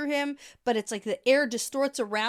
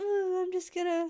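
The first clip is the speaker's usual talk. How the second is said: put-on simpering, weak, pitched-up little-girl voice; 6 semitones higher, 3 dB quieter than usual. Showing the other speaker what simpering means, in a simpering girly voice. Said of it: "How many more noises can you".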